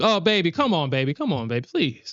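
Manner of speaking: fake pleading. Showing how to beg when she doesn't give it: mock begging. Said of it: "that's when you beg".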